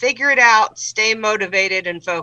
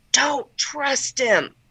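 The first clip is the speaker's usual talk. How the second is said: hushed, in-character half-whisper; 3 semitones higher, 4 dB quieter than usual. Leaning in to warn another character not to trust him: half-whispering in character. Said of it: "I'm gonna lean in and whisper".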